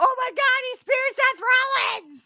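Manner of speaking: voice pitched way up high. Retelling a wrestling commentator's call after a spear: Michael Cole call. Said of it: "you can hear Michael Cole".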